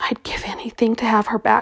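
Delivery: soft, breathy whisper under the breath. Reading a man's words about a dead woman, whispering. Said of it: "he whispered".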